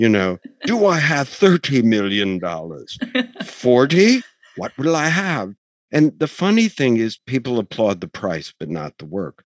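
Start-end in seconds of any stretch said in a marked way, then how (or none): 0.6-5.5 put-on vague, exotic European accent. Describing a painting being sold, the speaker mimics the person calling for bids: vaguely exotic European accent. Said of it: "vaguely exotic European accented beautiful man".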